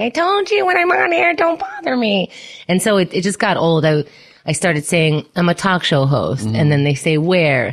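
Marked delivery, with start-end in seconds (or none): 0.0-2.3 very high, shrill hollering yell. Podcaster acting out how people picture them yelling from a basement, mock yelling. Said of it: "in my mom's basement yelling like".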